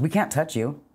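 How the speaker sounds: put-on scornful, disdainful, dismissive tone. Retelling a police officer's reply to a plea for help: imitating a contemptuous officer. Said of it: "he said it like I was trash".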